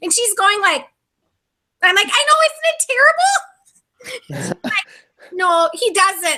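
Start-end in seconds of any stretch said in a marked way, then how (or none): 2.1-4.5 mock very high, slow, tearful near-crying wail. Retelling own past reaction to a woman who was shaking: retelling own near-crying. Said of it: "and I'm like almost crying".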